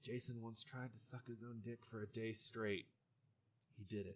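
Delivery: hushed half-whisper, very quiet, barely audible. Voicing a tree that half-whispers to a passing player: tree half-whispering. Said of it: "you just hear a tree whisper".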